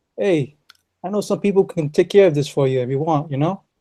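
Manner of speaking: put-on Italian accent in English. Streamers agree to read a line aloud, taking a crack at an italian voice. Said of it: "an Italian voice".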